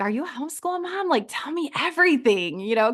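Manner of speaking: re-enacted whisper. The speaker retells what they said to another mom, retelling a whisper. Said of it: "kind of whispering".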